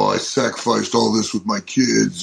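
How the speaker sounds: usual speaking voice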